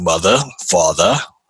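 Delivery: put-on Australian accent. Joking about greeting parents at birth: put-on Australian accent. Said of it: "Were you also from Australia?".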